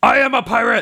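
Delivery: high-pitched, furious, very angry, forceful delivery. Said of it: "very angrily".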